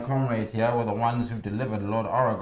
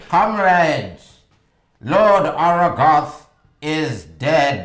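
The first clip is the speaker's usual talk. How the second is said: very loud, booming, amplified-sounding proclamation voice; 5 semitones higher, 9 dB louder than usual. Playing a character addressing armed soldiers after amplifying their voice by magic, booming voice. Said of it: "hear me in a booming voice".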